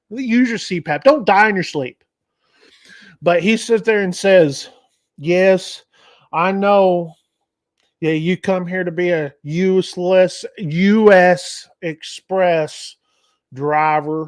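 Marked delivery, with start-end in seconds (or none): 5.1-14.2 put-on Tennessee accent, very slow drawl. Retelling what a man said back, imitating a Tennessee accent. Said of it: "He had a Tennessee accent".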